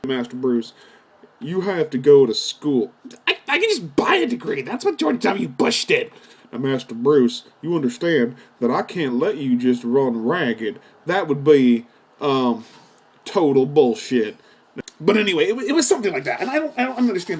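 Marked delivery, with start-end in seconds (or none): 6.5-14.4 put-on folksy drawl, much lower pitch. Addressing Master Bruce in a comic bit: sounding like Dr. Phil. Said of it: "Why do you sound like fucking doc, Doctor Phil?".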